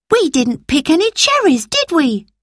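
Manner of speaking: sudden, very high, swooping cry. A girl suddenly remembers something and cries out to the other children. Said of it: "she cried".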